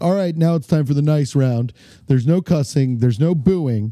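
ordinary talk

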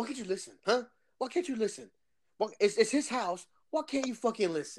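exasperated, angry, scolding outburst. Acting out how the speaker should have reacted: acting out getting mad. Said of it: "I should have got mad".

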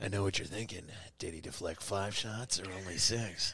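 deep, dropped-down movie voice, held low. Imagining Grogu quoting Dirty Harry lines: Clint Eastwood voice as Grogu. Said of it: "Grogu's voice to be like".

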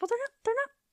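very high, fast, indignant tone. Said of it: "And it's like".

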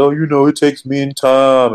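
fake typical man's voice. Retelling what Juan said about men needing time: imitating Juan as a typical heterosexual man. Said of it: "Juan sounded like a typical heterosexual man".

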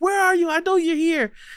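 high, loud panicked yelling. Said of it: "being panicked".

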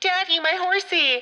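put-on shrill, very high, very loud little-girl voice. Retelling a film scene where a horse freaks out: imitating a little girl. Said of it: "you get the little girl".

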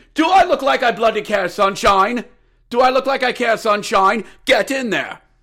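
contemptuous, scornful wrestling-announcer-style voice. Ordering a replacement goalie in after slipping out of Gordon Ramsay, as a William Regal impression. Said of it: "I went from Gordon Ramsay to William Regal there".

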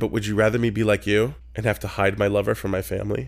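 ordinary delivery

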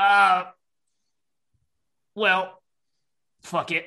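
slow, lumbering, drawn-out, deliberate creature voice. Voicing a monkey whose voice comes out as Orc's: Orc's voice. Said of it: "Orc that you recognize kind of comes out of this monkey's mouth".

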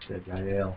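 soft, low mumbled speech.

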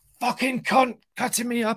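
very high-pitched screamed abuse. Retelling screaming at another driver from the car: imitating screaming at somebody. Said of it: "I'm screaming at somebody".

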